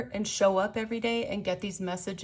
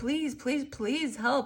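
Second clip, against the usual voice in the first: mock pleading tone, repeated over and over; 4 semitones higher than usual. Addressing the listener, the speaker acts out their repeated pleas for help: mock begging, pleading. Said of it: "asking and begging and pleading".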